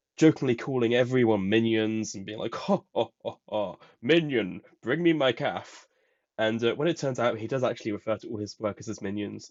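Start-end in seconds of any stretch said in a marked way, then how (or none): 2.6-5.9 slow, lordly, domineering boss voice, nice and slow. Retelling a character's joking impression of her dad: imitating Nakari's impression of her dad. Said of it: "Nakari does an impression of her dad".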